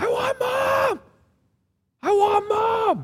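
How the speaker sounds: put-on high, slow, screaming toddler voice.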